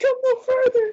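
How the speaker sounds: very high, breaking, cracking voice. Repeating how he says the line, imitating a cracking voice. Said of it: "his voice is cracking".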